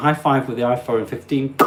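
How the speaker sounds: usual speaking voice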